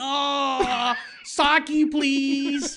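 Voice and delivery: high pleading voice. Retelling a friend standing with mouth open, asking for sake: imitating a friend begging with mouth open. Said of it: "there with your mouth open".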